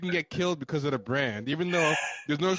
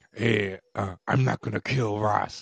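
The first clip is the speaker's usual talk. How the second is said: put-on monster voice, lower pitch; 6 semitones lower than usual. Mocking how Batman talks in the Batman Begins movie, in a Cookie Monster voice. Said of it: "with that Cookie Monster voice".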